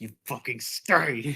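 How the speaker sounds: tense speech through clenched jaw and gritted teeth. Acting out what they say when Luke leaves, retelling it through gritted teeth. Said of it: "talking through, like, gritted teeth".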